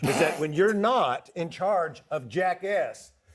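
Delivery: slow, deliberate, explaining tone. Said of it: "I'll talk slowly for everybody".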